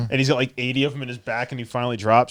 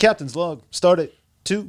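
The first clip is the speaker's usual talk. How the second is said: dramatic, halting captain voice, higher pitch; 6 semitones higher than usual. Showing how a comedian's impression goes: William Shatner impression. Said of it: "if I'm doing William Shatner".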